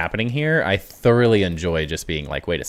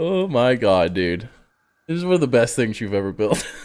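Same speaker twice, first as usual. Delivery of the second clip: crying with laughter; 3 semitones higher than usual. Speaker reacting to something another person built, crying with laughter. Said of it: "I'm literally crying right now".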